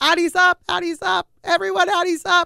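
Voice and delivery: high, loud screaming. Retelling how she called for the nurse, reenacting a scream. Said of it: "And I'm like screaming for the nurse".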